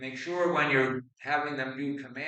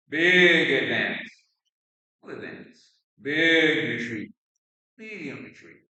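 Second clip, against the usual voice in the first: loud varied calls, shifting rhythm and tempo, "big" drawn out; 7 dB louder than usual. An instructor demonstrates calling footwork commands to an athlete, varied rhythm and volume commands. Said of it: "Break up the timing and the rhythm".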